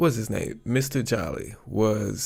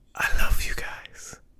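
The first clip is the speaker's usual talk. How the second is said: breathy, hushed whisper. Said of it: "I don't know why I whispered that".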